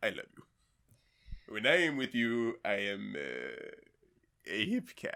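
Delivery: swooping cartoon cat voice, cracking mid-swoop. Recalling a favorite cartoon episode, the speaker quotes it in a Tom voice with a voice crack. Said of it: "Nice voice crack".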